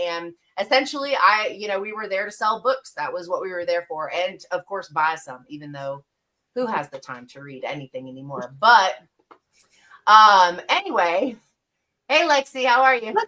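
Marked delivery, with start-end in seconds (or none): 12.1-13.1 loud, high, excited yell. Greeting someone mid-story, excited yelling greeting. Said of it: "yelling because I feel like she needs to for me to yell".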